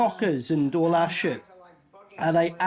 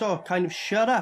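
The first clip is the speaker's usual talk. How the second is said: usual speaking voice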